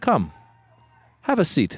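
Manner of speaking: mock-calm mafia-style menace. Retelling a friend's story, the grandfather addresses the boy: mock-calm mafia style. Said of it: "Like very like mafia style".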